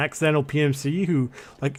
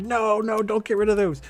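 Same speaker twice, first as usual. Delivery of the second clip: mock screaming, high-pitched; 6 semitones higher than usual. Acting out someone protesting getting rid of items: imitating someone screaming. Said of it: "someone gonna be screaming like".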